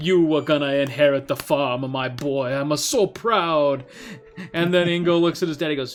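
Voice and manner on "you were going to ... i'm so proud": put-on Italian accent, slower. Retelling a story, a father speaks to his son at graduation, italian accent. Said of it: "Italian voice".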